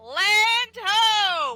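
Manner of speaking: high, drawn-out shout with ho stretched long. A player's character sees land approaching and calls out; shouting. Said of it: "make my voice um pretty much a shout".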